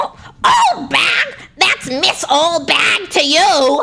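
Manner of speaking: put-on nasal elderly New York voice. Telling a story, the old woman answers being called old bag, nasal old New York voice. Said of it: "New York nasal old".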